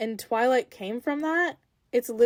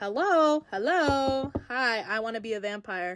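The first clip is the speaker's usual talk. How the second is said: slow, drawn-out, stretched-out words. Recapping the movie, acting out Bella's eager reply: imitating Bella. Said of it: "And Bella's like".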